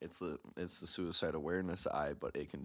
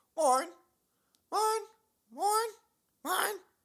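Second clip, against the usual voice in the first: fast, very high, crackly seagull-like shriek; 10 dB louder than usual. Trying out the seagull line from Finding Nemo: crackly Finding Nemo seagull voice. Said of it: "Oh that was too crackly".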